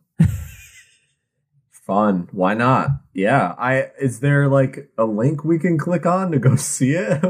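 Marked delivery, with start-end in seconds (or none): 0.2-2.9 low-pitched sarcastic voice. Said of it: "You just sounded so sarcastic".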